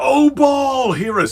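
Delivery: acted, very high, drawn-out calling-out shout. Retelling a crowd calling on Baal for fire: imitating a shout. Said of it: "they shouted".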